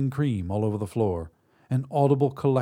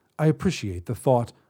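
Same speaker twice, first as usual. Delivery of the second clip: plain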